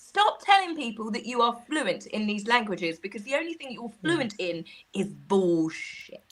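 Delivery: ordinary talk, nothing marked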